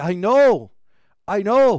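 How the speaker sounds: loud, high-pitched, excited shout.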